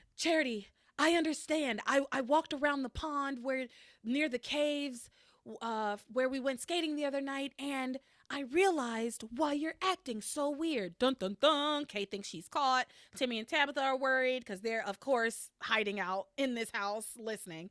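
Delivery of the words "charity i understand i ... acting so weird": play-acted all worked up, excited and eager. Retelling a scene where Miguel bursts into the room: imitating Miguel all excited. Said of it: "all excited".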